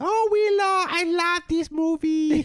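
very high, unhurried, drawn-out mother voice. Recalling mum's words about the movie willow: imitating mum's voice. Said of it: "All I could just hear is my mum's voice".

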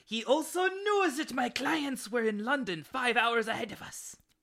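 heavy, bad German accent laid on thick. Telling a story about a man's elaborate plan, bad German-ish accent. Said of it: "You gotta cut the accent".

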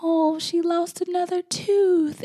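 mock very high, slow, teary voice. Retelling crying over small things: imitating own tearful voice. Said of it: "I find myself crying over the smallest things".

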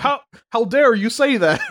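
indignant mobster voice. Retelling how the mafia guy reacts when his family asks about the mob: imitating an offended mafia guy. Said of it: "And he's like".

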